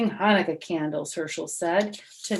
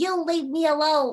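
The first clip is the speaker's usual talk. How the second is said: squeaky, scared little voice, high; 7 semitones higher than usual. Narrator reads the frightened little goblin's words to Herschel, squeaking. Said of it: "he squeaked".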